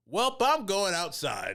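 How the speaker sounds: very high, loud, dragged-out drawn-out yell. Retelling a friend leaving an awkward moment: imitating Jansen yelling.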